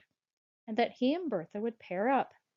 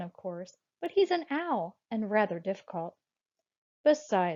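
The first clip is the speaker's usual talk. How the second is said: plain reading voice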